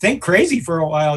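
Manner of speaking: normal talking voice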